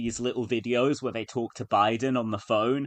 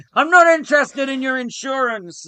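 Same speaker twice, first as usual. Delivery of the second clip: very high, very loud, shrill, dismissive shout; 10 dB louder than usual. Retelling the president's reaction to a call: imitating Joe Biden. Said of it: "Because Biden was obviously like".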